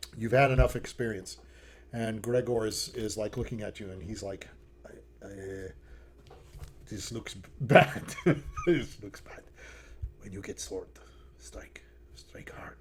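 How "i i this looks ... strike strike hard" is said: soft, breathy whisper under the breath. Voicing a nervous prisoner among guards: whispering. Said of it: "He's, like, whispering to you".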